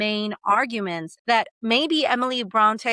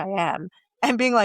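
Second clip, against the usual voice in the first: normal talking voice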